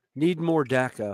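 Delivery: ordinary talk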